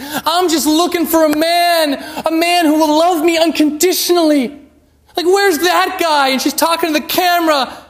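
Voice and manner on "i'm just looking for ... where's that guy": sobbing, weepy, tearful crying voice. Retelling a rejected woman on TV, imitating someone crying. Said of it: "She's just crying and crying".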